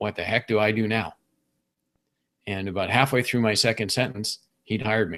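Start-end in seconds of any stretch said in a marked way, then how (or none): 0.0-1.1 very panicked, frantic, alarmed tone. Retelling how a doctor asked him on the phone, imitating a very panicked voice. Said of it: "he asked me in this very panicked voice".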